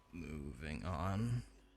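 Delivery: mock disgruntled, grumpy tone. Dismissing an enemy beaten in three minutes as a joke: mock disgruntled tone. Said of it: "Why do you sound so disgruntled?".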